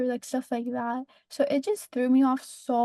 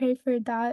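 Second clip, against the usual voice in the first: ordinary delivery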